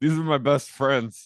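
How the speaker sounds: put-on slurred drunk speech. Retelling someone's words before a hot tub: imitating Mike's drunken slurring. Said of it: "who's totally slurring".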